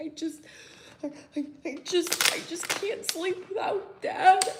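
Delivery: put-on, very high, slow sobbing stammer. Retelling a child crying about missing Dad: imitating Cope crying. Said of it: "the emotion was showing".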